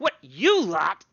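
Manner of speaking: booming, very loud shout at full volume. Voicing a character running down stairs by a door: Gorglak voice. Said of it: "Then he goes".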